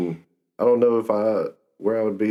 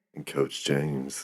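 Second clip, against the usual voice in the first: put-on slow late-night radio-host voice; 5 semitones lower, 8 dB quieter than usual. Introducing himself after his co-host on their fitness show, in his radio voice. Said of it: "That's my radio voice".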